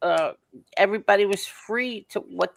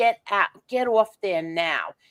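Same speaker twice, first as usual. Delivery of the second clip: angry put-on voice. Retelling what someone said during the show: imitating someone mad. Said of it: "because Tony was mad".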